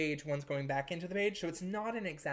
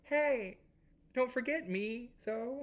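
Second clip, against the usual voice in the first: small, tiny, high put-on inner voice; 6 semitones higher than usual. Voicing the reminder students will hear during their exam, in a little voice. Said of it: "you'll hear a little voice, which is my little voice being".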